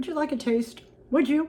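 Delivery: talking with mouth full. Tasting the food, the speaker offers the listener a taste, talking with mouth full. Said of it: "Let me swallow".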